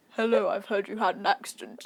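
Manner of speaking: deep, sexy, seductive voice. Retelling a phone call when the partner came on the line: imitating a deep sexy voice. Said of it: "this really deep, sexy voice came on".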